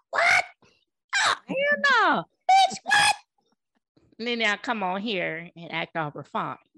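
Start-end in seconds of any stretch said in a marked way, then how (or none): 0.1-3.1 very high, shrill, swooping scream, long drawn-out no. Describing watching Married at First Sight each week: retelling screaming at the TV. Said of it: "I'm literally screaming at the TV".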